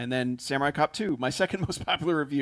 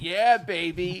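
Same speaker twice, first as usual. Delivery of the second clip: terrible put-on Australian accent, pitched up high; 5 semitones higher than usual. Mocking the guy in the office who keeps doing a bad Austin Powers impression. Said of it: "With an Australian accent".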